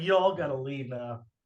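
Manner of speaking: ordinary delivery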